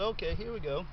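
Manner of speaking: ordinary talk, nothing marked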